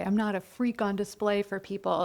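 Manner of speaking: ordinary talk, nothing marked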